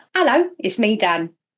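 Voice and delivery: put-on posh upper-class accent. Opening a podcast episode, greeting listeners in a put-on posh voice. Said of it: "That's my posh voice".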